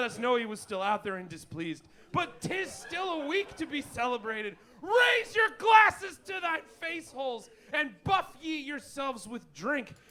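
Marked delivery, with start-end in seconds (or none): 2.1-9.9 hammed-up, over-the-top, grand, epic tone, pitched up. Proclaiming a celebration to the others: hammed-up mock-epic proclamation. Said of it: "This guy's going ham".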